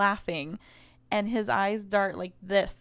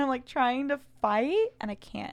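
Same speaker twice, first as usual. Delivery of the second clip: ordinary talk, nothing marked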